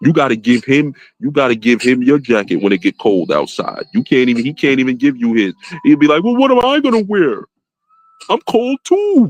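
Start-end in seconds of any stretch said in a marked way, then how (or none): 6.2-9.3 very high, sing-song, whiny crybaby voice. Mocking another man who won't give up his jacket: imitating a whiny crybaby. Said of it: "he just sounded like a big crybaby".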